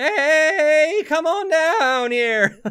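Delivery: squeaky, high, loud announcer call, "hey" stretched out. Speaker trying a cheesy announcer voice that drifted into Morty voice. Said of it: "Kind of kind of went Morty there".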